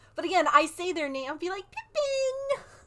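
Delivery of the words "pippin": very high, squeaky-pitched calling voice. Saying a name to get a reaction, very high 'Pippin'. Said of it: "it's like really high".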